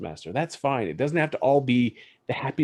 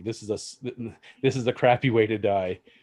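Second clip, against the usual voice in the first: usual speaking voice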